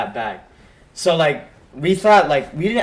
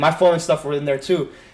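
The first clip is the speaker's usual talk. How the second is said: usual speaking voice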